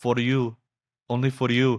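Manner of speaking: slow, high, lingering put-on Italian accent. Retelling a woman in a pool who answers a man, in an italian accent. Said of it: "she looks at him in like this an Italian accent".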